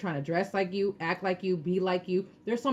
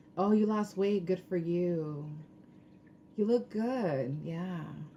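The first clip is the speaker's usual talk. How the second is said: put-on grudging, jealous, backhanded tone. Imitating an envious person complimenting weight loss: imitating an envious tone. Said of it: "it's like that tone".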